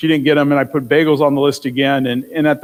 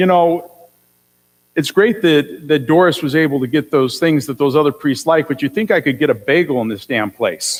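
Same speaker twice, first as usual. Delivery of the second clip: ordinary delivery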